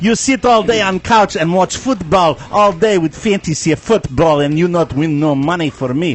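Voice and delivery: fake Russian accent throughout. Acting out a bit about watching fantasy football all day, put-on russian accent. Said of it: "why am I turning him into a Russian?".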